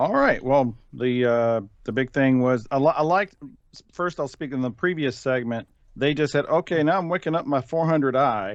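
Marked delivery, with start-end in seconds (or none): 6.5-8.6 mock deadpan, no emphasis, slower. Recalling a line from the previous segment, imitating a deadpan delivery. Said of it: "just deadpanned it".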